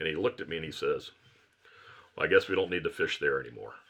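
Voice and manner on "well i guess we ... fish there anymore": plain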